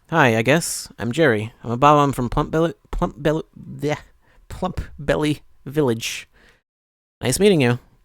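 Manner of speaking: soft, glum, deflated, downcast voice. Reading a Bob-omb's game dialogue aloud, downcast Jerry voice. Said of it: "Sorry I sound so down".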